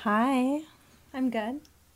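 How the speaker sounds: slinky, seductive, sultry come-hither tone. Answering the presenter's greeting on a podcast: seductive voice. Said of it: "That was really seductive".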